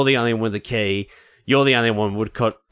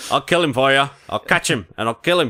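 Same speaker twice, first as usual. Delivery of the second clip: weird put-on New England accent, higher; 4 semitones higher than usual. Quoting a line from Jaws: Quint's weird New England accent.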